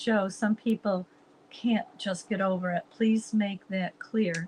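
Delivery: ordinary talk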